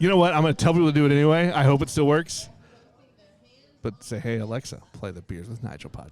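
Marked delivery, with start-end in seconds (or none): 4.2-6.1 sexy voice, much quieter. Telling listeners what to ask alexa to play the podcast: sexy voice. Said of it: "he just wanted to say it like that, all sexy".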